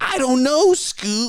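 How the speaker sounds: very high, loud, goofy put-on voice. Having just called the first try terrible, another go: terrible Shaggy impression. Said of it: "That's terrible Shaggy".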